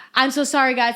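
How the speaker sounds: put-on nervous tone. Retelling an auditioner who kept stopping: imitating a nervous auditioner. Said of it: "she starts going".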